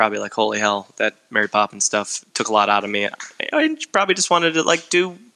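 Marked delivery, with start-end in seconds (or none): none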